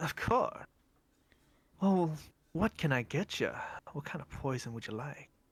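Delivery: put-on oddly silky, polished, smooth young boy voice. Narrating a scene, voicing a young boy who approaches the group: weirdly smooth young boy voice. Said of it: "This young boy with a weirdly smooth voice goes".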